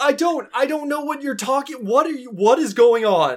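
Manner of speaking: freaking out. Voicing a man with his hands up as Sorrel demands answers, freaking out. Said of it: "he's just like freaking out".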